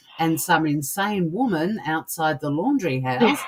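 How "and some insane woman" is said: usual speaking voice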